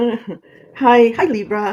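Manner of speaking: bright laughing voice. Greeting viewers while a pug snores nearby, laughing while talking.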